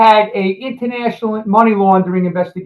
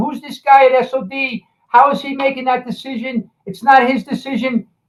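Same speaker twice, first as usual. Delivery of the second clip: mock heated, scolding yelling, American-sounding; 4 semitones higher than usual. Retelling a U.S. attorney's call to the head of DEA: imitating Susan Brooks yelling. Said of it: "was yelling".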